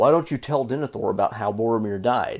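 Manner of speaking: ordinary delivery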